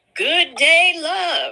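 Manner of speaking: very high, put-on voice. Reading out his reply in a text message exchange, doing a Nesto voice. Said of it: "I don't know why I got to do my Nesto voice like that".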